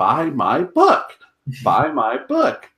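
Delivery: slow, swooping voice like a talking doll. Recalling The Critic, a fan imitates the character's talking mock-up: Jay Sherman talking-doll impression. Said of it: "So that doesn't sound anything like you".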